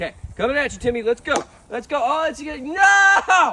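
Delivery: very slow, loud, high, drawn-out sports-dad hollering. A father playing baseball with Timmy yells at him, yelling. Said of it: "I'm sorry I yelled".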